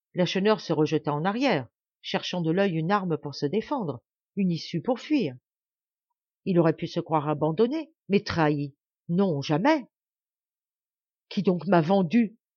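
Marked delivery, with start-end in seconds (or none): 11.3-12.3 strangled, choked voice, words catching. A cornered man who believes he has been betrayed, in a choked voice. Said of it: "dit-il d'une voix étranglée".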